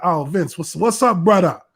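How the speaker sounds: cheery, energetic, put-on Hawaiian accent. Retelling how they answered his phone calls: put-on Hawaiian accent.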